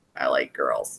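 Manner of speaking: soft, sorrowful, downcast, sad delivery. Retelling a comic-book scene, imitating a character speaking sadly. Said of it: "says really sadly".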